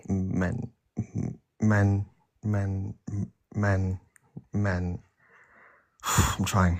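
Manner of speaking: stuttering. Answering which prompt they disagree with, stuttering. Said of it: "I'm stuttering".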